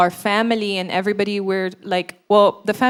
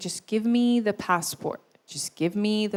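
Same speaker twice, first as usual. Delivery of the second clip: put-on tearful pleading, crying; 6 dB quieter than usual. Retelling a mother's plea for the passport: imitating someone crying and pleading. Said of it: "she's crying, and she's like".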